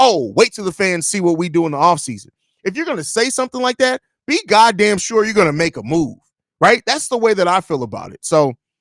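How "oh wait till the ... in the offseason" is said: normal talking voice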